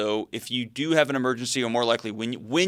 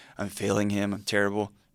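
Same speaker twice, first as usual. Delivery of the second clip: mock self-blaming tone, lower pitch; 4 semitones lower, 3 dB quieter than usual. Voicing the guest's feeling behind her answer: imitating a guilty voice. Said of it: "It was like".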